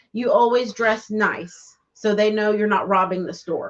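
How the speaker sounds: ordinary talk, nothing marked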